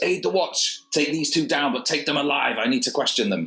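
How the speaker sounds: high, roaring, bellowing voice. Dwarf watch captain in a three-way duel roars at the arriving party; roaring commands. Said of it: "So, the barrel-chested dwarf in the centre of the blue uniform of the watch, / you see a barrel-chested dwarf. He's relatively big for a dwarf. He's, almost human height, and he's, huge with it. / the".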